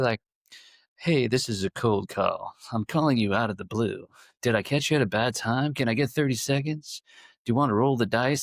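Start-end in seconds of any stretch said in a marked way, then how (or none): 1.0-8.4 put-on cheesy infomercial salesman phone voice. Mimicking how cold callers talk on the phone, in an almost movie phone voice. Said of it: "almost a movie phone phone voice".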